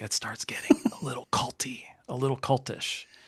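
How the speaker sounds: hushed, soft whisper close to the mic. Talking with another speaker about pastors, leaning into the mic: whispering. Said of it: "I'm gonna whisper in the mic".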